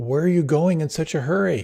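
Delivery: mild, called-out voice. Retelling a story of a man on the road: imitating someone yelling a question. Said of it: "he yells out to this guy".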